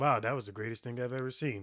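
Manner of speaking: deadpan, very flat monotone, no inflection at all. Retelling a man's reaction to the speaker's trick, in a flat monotone voice. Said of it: "in a very monotone voice".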